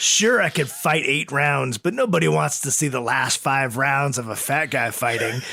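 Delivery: ordinary delivery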